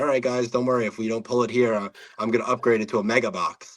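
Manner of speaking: ordinary talk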